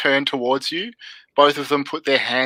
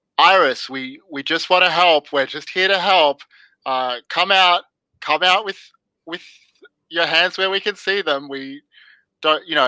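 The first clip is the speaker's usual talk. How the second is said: uneasy, edgy, nervous voice calling out, stammering; 3 semitones higher than usual. Narrator voicing an armed man calling out to someone hiding, nervous voice. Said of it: "He has this nervousness in his voice".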